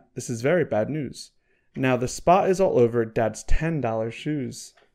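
ordinary delivery

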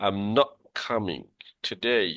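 strong stress hitting the word "not". English lesson, making clear you are not coming: stress on "not". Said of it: "এই জন্য নটটার উপর জোর দিব".

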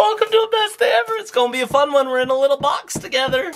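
excited, high-pitched, fast, hyped delivery.

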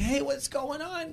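very high voice, cheerful yet audibly pained. Retelling Jerry greeting the speaker: imitating Jerry's pained happy voice. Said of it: "they sound like they're happy for you, but they sound like they're in pain also".

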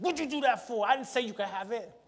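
put-on scolding parent voice. Acting out a parent whose child took something without asking, mock-scolding parent. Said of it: "You're like".

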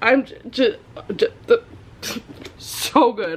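stammering. Praising a book, the speaker stammers.

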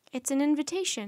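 ordinary delivery, nothing marked

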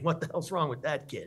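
mock delivery broken up by amused laughter. Retelling a man on the bus pointing at him: imitating someone laughing while talking. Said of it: "with a smile on his face while laughing".

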